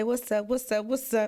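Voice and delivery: normal talking voice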